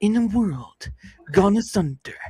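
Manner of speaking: slow, dramatic, epic movie-trailer narrator voice. Asking viewers to like, share and comment, in a movie voice. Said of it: "I'll do my movie voice".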